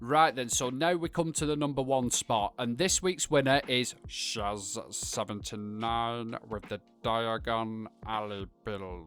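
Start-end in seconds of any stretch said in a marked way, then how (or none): 4.1-9.1 bad, very slow, drawling put-on wizard voice. Announcing this week's winning build on a video, terrible Snape impression. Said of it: "a fucking terrible impression of Snape".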